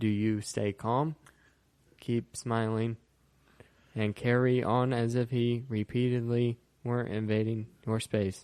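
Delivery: mock flat, level, uninflected deadpan audiobook-style narration. Imitating how the author reads this line in her audiobook: flat Hillary Clinton reading. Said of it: "she doesn't read it like that at all".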